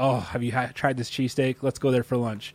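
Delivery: normal talking voice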